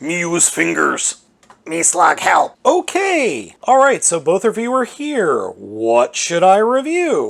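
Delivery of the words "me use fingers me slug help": giant toy robot dinosaur voice. Voicing a toy explaining how it escaped its display case: Grimlock voice. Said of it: "how did you get out of the display case?".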